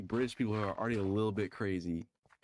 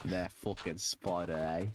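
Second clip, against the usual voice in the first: put-on Australian accent, lower pitch; 4 semitones lower than usual. Repeating a line back and forth, do an Australian accent. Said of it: "That was Australian".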